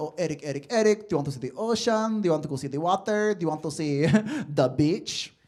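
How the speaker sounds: heavy, thick, laid-on put-on Filipino accent. Speaker recalls his mom talking to him growing up, thick filipino accent. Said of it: "got a thick Filipino accent".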